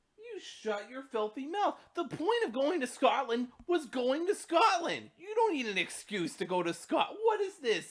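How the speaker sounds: very high, loud tirade with wide pitch swoops. Answering another speaker's question with a rant, channeling Simon Miller. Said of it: "I'm channeling my inner Simon Miller".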